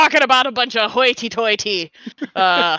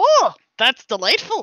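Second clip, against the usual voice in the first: pirate voice, Minnesotan and Irish; 3 semitones higher than usual. Trying out a pirate accent that keeps drifting: Minnesotan Irish pirate accent. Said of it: "Minnesotan Irish pirate".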